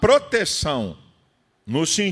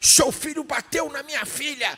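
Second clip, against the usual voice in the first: furious, enraged, pitched high; 9 semitones higher than usual. Retelling a father confronting him after he preached, imitating a furious man. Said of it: "O cara estava possesso".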